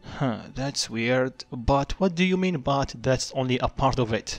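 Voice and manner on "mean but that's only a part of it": ordinary delivery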